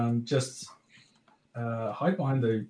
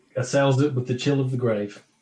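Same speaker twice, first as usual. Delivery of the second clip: ordinary talk, nothing marked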